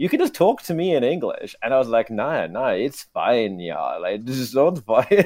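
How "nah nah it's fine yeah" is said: slow, exaggerated, put-on German accent. Replying to a man who offered to speak english, in an offensive german accent. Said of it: "speaking in an offensive German accent".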